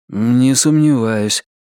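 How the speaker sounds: muttered, mumbling, embarrassed. Narrator reading a character's reply to a beggar woman's story, muttered, embarrassed. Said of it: "пробормотал Ричард, окончательно смутившись".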